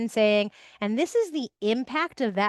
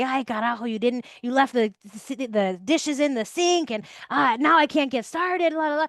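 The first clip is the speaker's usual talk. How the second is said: put-on angry yelling; 2 semitones higher than usual. Showing how yelling at everybody about dishes sounds: acting out yelling at family. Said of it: "I just start yelling at everybody".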